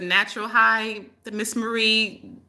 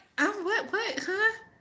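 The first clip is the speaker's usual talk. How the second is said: play-acted dazed, spaced-out confusion, very high and slow; 10 semitones higher, 10 dB quieter than usual. Retelling how a friend answered after her reset: imitating Kathy sounding zoned out. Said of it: "That's how she sounded".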